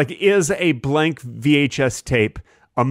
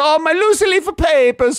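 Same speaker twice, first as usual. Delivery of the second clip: fake Italian chef accent, higher; 3 dB louder than usual. Acting out the Italian writer chef losing papers: put-on Italian chef voice. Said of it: "the Italian writer chef says".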